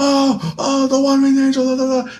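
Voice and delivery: very high, ringside wrestling announcer delivery. Retelling a wrestling finisher call: imitating a wrestling announcer. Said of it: "the announcer is like".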